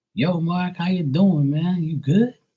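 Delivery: put-on laid-on Georgia accent. Retelling how people in Georgia greeted him, in a Georgia accent. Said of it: "talking all that Georgia accent".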